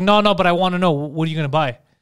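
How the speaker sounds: plain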